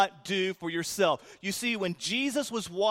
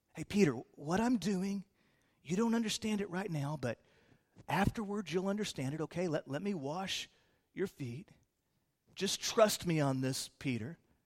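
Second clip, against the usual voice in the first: hushed, soft, quiet half-whisper; 3 semitones lower, 7 dB quieter than usual. Picturing the speaker of the verse talking to Peter: quiet half-whisper as Jesus. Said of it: "picture Jesus whispering this kind of quietly".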